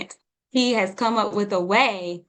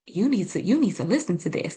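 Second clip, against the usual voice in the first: hushed, quiet whisper. Retelling what her partner said during the video: imitating him whispering.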